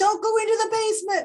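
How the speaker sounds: quick, high-pitched yelling. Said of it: "you're yelling at the screen".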